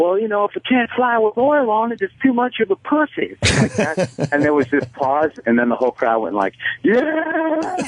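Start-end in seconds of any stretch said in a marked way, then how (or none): 0.0-3.4 bad, very high-pitched, put-on Southern accent. Speaker retells what he said to a crowd, horrific southern accent. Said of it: "horrific Southern accent".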